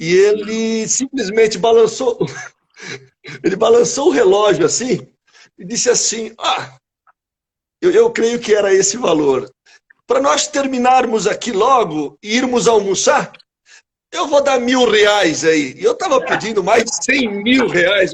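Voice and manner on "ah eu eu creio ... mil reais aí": put-on man's voice with European Portuguese accent. Retelling what an older Portuguese man said at a settlement attempt, European Portuguese accent. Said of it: "ele tinha aquele sotaque português dos nossos patrícios".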